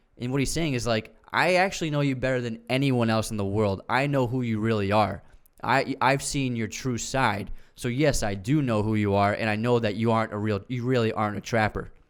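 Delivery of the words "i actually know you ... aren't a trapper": ordinary talk, nothing marked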